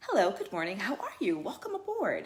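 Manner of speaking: polished, sing-song corporate sales voice. Demonstrating the voice people use when working, corporate sales voice. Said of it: "you have your corporate sales. ... Voice".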